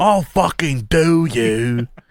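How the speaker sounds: fake, cartoonish mock British accent. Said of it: "Americans doing British accents".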